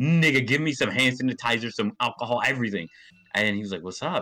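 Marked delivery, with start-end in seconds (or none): 0.0-2.9 frantic, terrified, loud panicked screaming. Retelling running terrified into another building, reenacting one's own screaming. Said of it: "I was just screaming".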